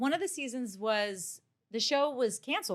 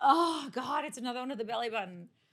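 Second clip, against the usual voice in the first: mock, griping, complaining tone. Retelling complaints about a costume belly button: imitating own past complaining.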